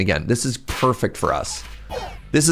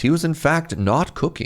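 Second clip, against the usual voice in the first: broadcast game announcer voice; 4 semitones higher than usual. Commenting on own gameplay, switching to an announcer voice. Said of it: "announcer's voice".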